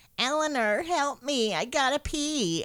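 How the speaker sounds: put-on very high, slow, drawn-out, bratty, taunting kid voice. Describing a kid banging on the wall with a cane, imitating a kid mocking. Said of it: "banging on the wall with a cane and mocking".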